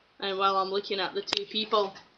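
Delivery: normal talking voice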